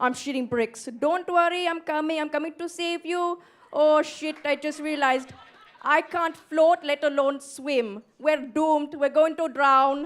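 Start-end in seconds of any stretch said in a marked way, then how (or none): 1.0-10.1 put-on Indian accent all the way through. Acting out Uncle Sabi paddling out to save her: imitating an Indian accent. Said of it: "thank God she did the accent".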